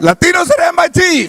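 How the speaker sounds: high, wide, projected shout.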